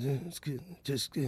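soft mumbling under the breath. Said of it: "the moment you're mumbling".

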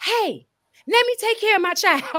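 play-acted very high, shrill, far-carrying shout. Retelling what the mother yelled in the stands: imitating her mom yelling. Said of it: "my mom yelled".

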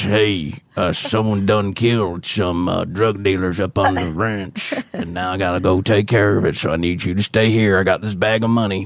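low, gruff, cool-guy delivery. Quoting a man the speaker is describing, in a really cool low voice. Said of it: "he's got a really cool low voice".

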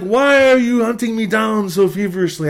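put-on Armenian-accented speech. Retelling what a man asked after sitting him down, imitating Fausto's Armenian accent. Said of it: "I can't do the accent as well as Fausto did".

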